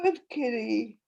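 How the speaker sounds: put-on cooing, high-pitched baby talk voice. Narrator speaking to a cat that has just settled down, baby voice. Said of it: "I say in my baby voice".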